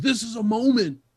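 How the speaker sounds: loud screamed ringside announcer call. Mocking a commentator who says it every match: imitating Michael Cole screaming. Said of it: "it's Michael Cole screaming".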